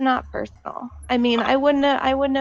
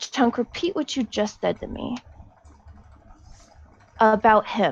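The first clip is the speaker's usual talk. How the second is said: calmest possible voice, strained, frustration underneath; 2 semitones lower than usual. Holding back rage, asking another character to repeat what he said: forced calm voice. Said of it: "in the calmest voice I can".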